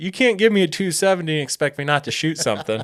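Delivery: high, hollered call. Recounting shooting a bear, the speaker recreates what he hollered to him; retelling his own holler. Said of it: "I holler".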